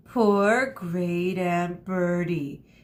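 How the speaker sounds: condescending, patronizing tone with false pity. An officer at a casket answers a lie, condescending. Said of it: "he said in a condescending voice".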